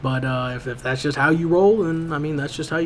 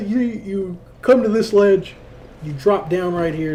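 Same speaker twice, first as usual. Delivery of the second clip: tired yawning speech, much higher and slower; 4 semitones higher, 3 dB louder than usual. Gamer explains a route through a game level, yawning while talking. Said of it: "Sorry for all the yawning".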